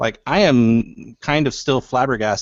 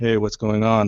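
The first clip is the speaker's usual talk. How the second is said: put-on flat monotone voice. Describing how a character is voiced: Saitama's monotone voice. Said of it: "his kind of mute, monotone tone voice".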